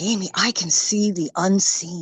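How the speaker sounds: slow, measured, unhurried, deliberate delivery. Retelling what a grandchild said while getting a back scratch: imitating someone speaking quietly. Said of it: "he says real quietly".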